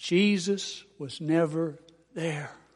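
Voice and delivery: low-key, quiet, soft-spoken delivery. Retelling what he answered a man who had just spoken: retelling a quiet reply. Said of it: "in a quiet voice I said".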